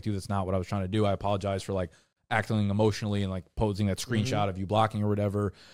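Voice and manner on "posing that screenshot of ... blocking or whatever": normal talking voice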